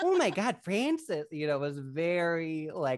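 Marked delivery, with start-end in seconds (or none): 0.0-1.3 put-on Midwestern Michigan accent, higher pitch. Imitating the mom character from a movie: imitating the mom's midwestern accent. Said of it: "her accent is so".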